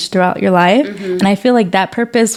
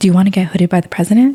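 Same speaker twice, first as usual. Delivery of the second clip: imitated whisper. Retelling what the ASI president asked about the hooding: imitating a whisper. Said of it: "he whispered to me".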